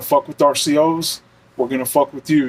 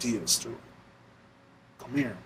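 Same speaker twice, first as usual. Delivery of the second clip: very quiet, hushed, under the breath; 15 dB quieter than usual. Retelling how two inmates called the speaker over from their cells, very quiet voice. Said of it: "in a very quiet voice".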